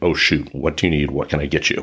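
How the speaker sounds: ordinary talk, nothing marked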